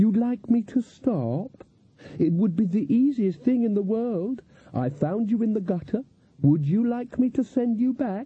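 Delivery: sweet honeyed tone. Reading a story, Lilith goes on speaking to him, sweetly. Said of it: "said Lilith sweetly".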